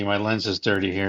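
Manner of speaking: ordinary talk, nothing marked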